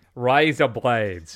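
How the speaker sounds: Australian accent. Trying to get into an accent with a practice phrase: australian accent. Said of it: "Now I'm Australian".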